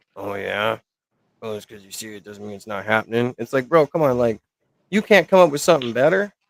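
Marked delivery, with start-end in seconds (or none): 0.2-3.4 soft little smoker's voice. Retelling how Smack answered Heather: imitating Smack's smoker voice. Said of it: "Smack's little smoker voice was like".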